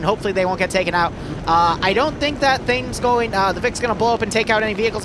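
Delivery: fast, rushed, play-by-play commentary style.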